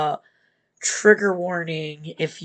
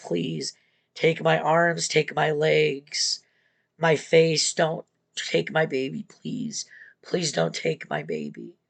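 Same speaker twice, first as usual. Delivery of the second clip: mock desperate pleading tone. Retelling a story of a woman attacked by a bear, imitating desperate begging. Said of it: "And she begs".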